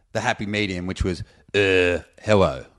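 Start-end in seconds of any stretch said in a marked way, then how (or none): 1.6-2.6 slight touch of French accent. Retelling one's own past greeting abroad: slightly French-sounding accent. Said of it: "that sounds a bit French".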